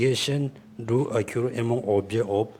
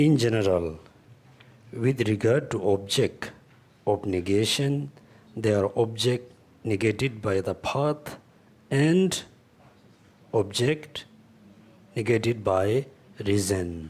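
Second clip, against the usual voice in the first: very slow, drawn-out, deliberate reading aloud. Speaker revising chapter seventeen aloud for listeners, reading very slowly. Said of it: "so I will read very slowly".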